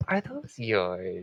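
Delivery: very low, soft, sweet, honeyed tone. Pointing up at the spirits on the balcony, asking about them, honeyed voice. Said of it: "use her best honeyed voice".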